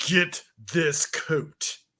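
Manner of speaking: put-on British accent. Voicing a character's talking hand in a coat shop: put-on British accent. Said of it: "Why does your hand speak with a British accent?".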